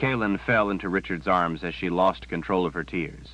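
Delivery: ordinary delivery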